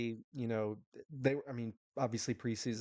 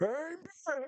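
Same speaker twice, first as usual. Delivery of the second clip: badly done, very high cartoon character voice. Joking about a coach reappearing, doing a terrible Barney impression. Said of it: "that's a terrible Barney".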